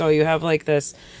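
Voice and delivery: ordinary delivery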